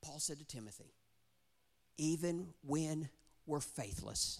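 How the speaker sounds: voice getting choked up. Speaker quoting Paul's words to Timothy, choked up. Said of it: "I'm getting choked up on this one".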